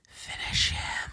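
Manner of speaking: hissing voice of an enchantress character. Narrator reading the enchantress's words to Sean, hissed. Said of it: "the enchantress hissed".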